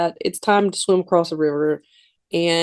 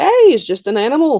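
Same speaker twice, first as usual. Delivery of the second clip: put-on broadest, thick Canadian accent, raised and high-pitched; 7 semitones higher, 5 dB louder than usual. Retelling a story, a dad answers his daughter about an animal she found: thick canadian accent. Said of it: "he has the most Canadian accent ever".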